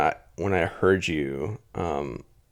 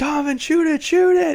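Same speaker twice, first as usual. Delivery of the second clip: shrill, very high, loud screaming; 8 dB louder than usual. Retelling a teammate falling asleep in a game: retelling screaming at a teammate. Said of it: "screaming at him".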